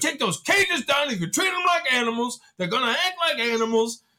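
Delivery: angry, irritated talking. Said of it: "he's all pissed".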